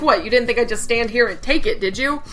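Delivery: plain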